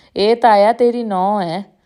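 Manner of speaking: speaking through loud laughter, laughing out loud. A man asks his uncle about a passing girl; laughing loudly. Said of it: "ਉੱਚੀ ਸਾਰੀ ਹੱਸ ਕੇ".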